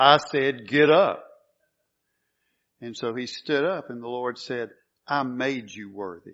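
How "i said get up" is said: very strong, loud, slow, forceful commanding voice. A speaker retelling the Lord's command to a man on the floor, very strong voice. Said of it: "he said in a very strong voice".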